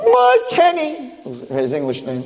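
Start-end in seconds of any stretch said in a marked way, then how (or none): 0.0-1.1 put-on, very high-pitched scream. Telling a story, acting out his mother's reaction: imitating a mother screaming. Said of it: "and starts screaming".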